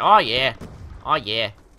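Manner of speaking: slow, drawn-out character voice. Playing a game, joking about sounding like Peter Griffin: Peter Griffin voice. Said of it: "I sounded like Peter Gr-".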